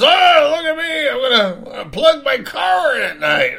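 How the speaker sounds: high, swooping, giddy, excited show-off bragging tone. Mocking a neighbor who bought an electric car: imitating an excited boast. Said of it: "he's so excited, he's telling all his neighbors".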